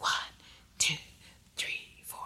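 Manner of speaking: soft, whispering tone. Showing how to whisper the counts while snapping fingers: whispering tone. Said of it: "But have a whispering tone like this".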